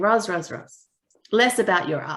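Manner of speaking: put-on thick, laid-on, heavy Italian accent. Retelling what an Italian artist friend said: heavy Italian accent. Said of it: "heavy Italian accent".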